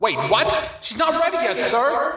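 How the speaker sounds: shouted outburst, very high, swooping. Calling out to the man he addresses as sir: shouted. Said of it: "shouted Augustus".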